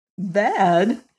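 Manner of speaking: laughing slightly while speaking. A woman answers a man's hurried confession; with a little laugh. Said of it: "She asked with a little laugh".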